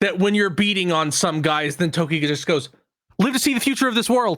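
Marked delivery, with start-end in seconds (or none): 3.2-4.4 blurted out at top speed, fast and pitched up. Describing a game's awful voice acting, Toki's line, as fast as possible. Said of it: "like as fast as possible".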